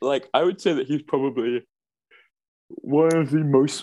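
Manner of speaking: words stretched by yawning. Praising an actor's popularity mid-sentence, yawning. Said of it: "I just stopped yawning".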